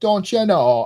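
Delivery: mocking Jamaican-sounding accent. Imitating the other speaker's phrase: imitating a Jamaican-sounding Wisconsin accent. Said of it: "you're like".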